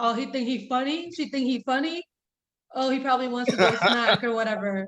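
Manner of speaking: jealous, suspicious guy's voice. Acting out the voice of a guy hearing his partner praise another man: imitating a jealous guy's voice. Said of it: "I already had a guy's voice in my ear".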